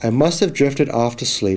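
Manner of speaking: plain reading voice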